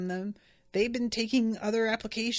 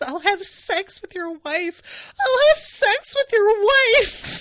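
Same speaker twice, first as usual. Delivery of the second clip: ever more desperate, very high, very loud pleading; 11 semitones higher, 10 dB louder than usual. Speaker acts out a woman repeating her one line, imitating her increasingly desperate tone. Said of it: "in more and more desperate tone of voice".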